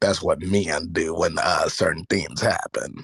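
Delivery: voice dropped low. Joking right after announcing he'll lower his voice, in a lowered voice. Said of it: "let me lower my voice real quick".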